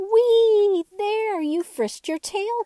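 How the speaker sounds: gleeful very high squeal, whee drawn out. Reading a story where the dolls cheer the wooden horse: joyful cry. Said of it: "cried all the dolls as joyfully".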